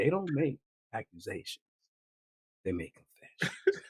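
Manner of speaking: silky, soft, smooth, calming soothing voice. Quoting how a man with a soothing voice said a line, imitating a smooth voice. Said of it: "that boy sounds smooth".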